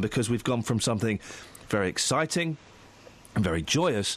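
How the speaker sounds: low serious sarcastic tone. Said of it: "I need to lower the tone of my voice".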